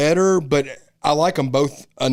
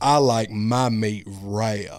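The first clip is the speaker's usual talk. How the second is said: put-on slow, deep southern accent; 5 semitones lower, 3 dB quieter than usual. Imitating a horror-movie character's line: mock southern plantation owner voice. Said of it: "What are you, a southern, a southern plantation owner?".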